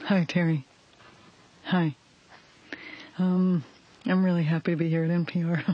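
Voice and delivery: bottom-of-the-range deep voice, as low as possible. Greeting Terry on NPR, the speaker demonstrates a put-on voice: lowest possible voice. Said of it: "That's about as low as I can get".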